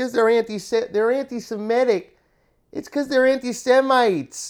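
put-on Yiddish-inflected accent.

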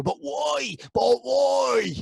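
put-on very high, very slow, drawn-out Cork accent. Mocking a colleague's insecure whining: Cork-accented Tony Kelly impression. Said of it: "a Cork accented Tony Kelly".

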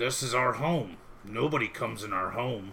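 real low, deep giant crab-monster voice. Voicing a giant monster crab answering a player's question, in a real low crab voice. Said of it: "he gets a real low voice".

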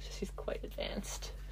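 quiet, slow whisper.

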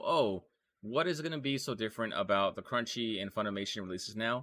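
ordinary talk

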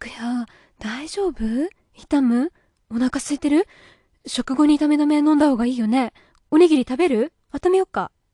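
fretful, worried, rushed, nonstop rambling. A mother, just back from the front door, fusses over the listener: worried fast rambling. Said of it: "心配そうな早口でまくし立てる".

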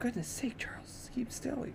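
barely audible, very quiet whisper. Mr. webb climbs to the edge of the box and speaks to charles, whispered. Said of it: "he whispered".

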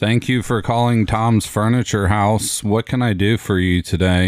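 bored, utterly disinterested, very low delivery. Demonstrating how a furniture store employee answers the phone: really disinterested. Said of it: "you got to sound like really disinterested".

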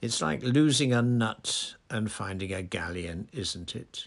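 usual speaking voice

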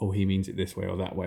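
plain

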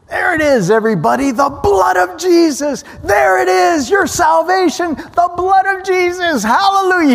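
put-on very high, ecstatic, wild preacher shouting. Retelling how the director shouted during a take, imitating the director shouting. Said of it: "He just started shouting".

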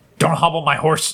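aggressive, forceful delivery. Asked by the others to say the phrase once more, aggressive. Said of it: "preferably like the way Luke says it".

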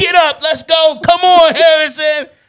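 acted-out, loud, encouraging yelling. Complaining about her partner yelling at their son during a drill, imitating someone yelling. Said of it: "you yelling like".

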